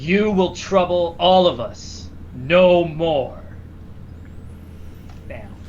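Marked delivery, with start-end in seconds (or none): 0.0-3.6 booming, slow, loud pronouncement. Narrating the blast scene, speaking as him and Apollo together, booming Apollo voice. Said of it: "kind of in a booming voice".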